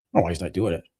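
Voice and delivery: put-on mad, baffled, low, annoyed mutter. Retelling Steve's reaction to Nick skipping Arnold UK, imitating Steve being mad. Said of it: "Steve was like mad".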